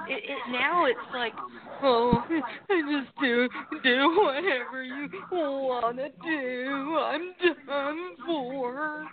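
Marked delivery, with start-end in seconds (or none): 1.8-9.0 very slow, dragging delivery, every word drawn out. Imitating Brandon Ace now that he is alone: Brandon Ace impression. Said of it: "Is that a pretty good impression?".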